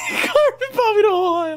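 high squealing laughter mixed with crying.

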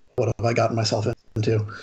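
low muttering, character voice. Voicing Alexei as he reacts in the scene, muttering under his breath. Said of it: "mutters something under his breath".

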